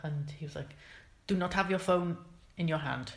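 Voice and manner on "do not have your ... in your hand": usual speaking voice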